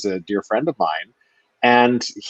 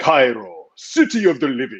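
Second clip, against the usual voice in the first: deliberate, slow, drawn-out, grand, pitched-up delivery; 5 semitones higher than usual. Retelling a private moment on trailer steps: John Rhys-Davies booming voice. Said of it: "we hear your booming voice".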